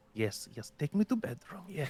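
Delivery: secretive, hushed half-whisper under the breath. Voicing a character passing the guards: half-whispering. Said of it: "kind of whisper".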